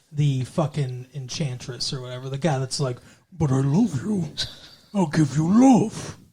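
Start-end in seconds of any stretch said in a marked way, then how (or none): 3.3-6.2 stupid-sounding, simple, dim-witted ogre voice. Describing a guy in a story, doing a stupid-sounding impression of him. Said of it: "He sounds stupid when you do an impersonation of him".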